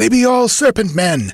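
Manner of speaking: high, rasping, grating voice. Narrator voicing the Pict in a read story, rasping voice. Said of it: "rasped the Pict's voice".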